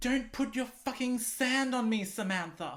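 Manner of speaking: high, petty, bickering, squabbling tone. Retelling two beachgoers arguing near their towels: mock bickering. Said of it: "bickering and arguing".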